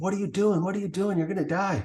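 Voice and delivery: high, frantic, alarmed, urgent pleading. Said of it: "He's like".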